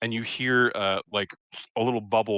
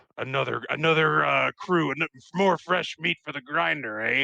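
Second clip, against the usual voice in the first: gruff, soldier-style character voice, pitched up; 5 semitones higher than usual. Voicing a gruff military character looking over the group: gruff military character voice. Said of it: "he is kind of a gruff military style person".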